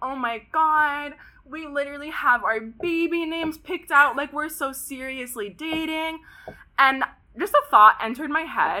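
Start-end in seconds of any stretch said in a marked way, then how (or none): 0.0-6.2 hushed, sobbing, panicked, crying whimper. Retelling a woman crying in her car, imitating someone crying. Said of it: "And she starts crying".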